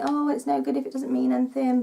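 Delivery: ordinary talk, nothing marked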